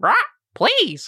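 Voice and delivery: very high, squawking parrot voice. Voicing Smoothie demanding a bow tie from Marshall: Smoothie the parrot voice. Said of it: "Smoothie also looks at you, Marshall, and goes".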